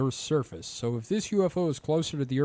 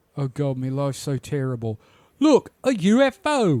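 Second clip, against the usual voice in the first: loud, terrible put-on British accent; 8 dB louder than usual. Voicing someone in the UK spotting a UFO, in a terrible British accent. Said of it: "That has a terrible British accent".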